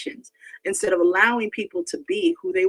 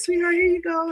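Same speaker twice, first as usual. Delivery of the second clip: sugary, very sweet, put-on kind voice; 9 semitones higher than usual. Acting out serving poisoned donuts: pretend kind, soft tone. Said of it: "In a very kind way".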